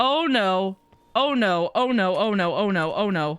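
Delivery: panicked, very slow, drawn-out delivery. Realizing the fog is closing in during a game: panicking. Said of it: "I'm panicking".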